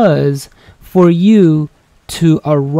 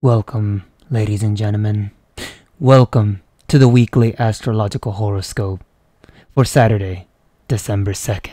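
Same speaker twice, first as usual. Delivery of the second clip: eerie, solemn, low, serious, creepy tone; 6 semitones lower, 4 dB quieter than usual. Opening the weekly horoscope for the audience, in a creepy voice. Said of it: "Why do you sound so creepy?".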